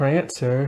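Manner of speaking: quiet, soft-spoken, gentle calling voice. Imitating how a character said her horse's name in season one, imitating her soft-spoken voice. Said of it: "She used to always say it like that in season one, her soft spoken voice".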